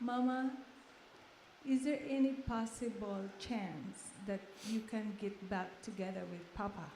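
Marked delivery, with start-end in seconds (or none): none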